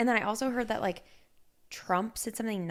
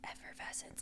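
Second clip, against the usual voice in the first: put-on, quiet, unsure, growing quieter. Retelling how Jason repeated an unfamiliar word: imitating Jason repeating a word quietly. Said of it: "he would repeat it in his, like, quietly".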